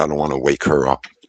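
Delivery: careful, hushed stage whisper. Retelling own words from the day Enzo was born: retelling own half-whisper. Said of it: "I whispered".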